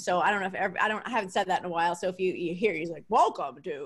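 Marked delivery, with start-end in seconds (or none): 3.1-3.9 put-on announcer voice, pitched much lower. Talking about her husband, the speaker mimics his podcast intro: Greg's announcer voice. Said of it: "He has an awesome announcer voice".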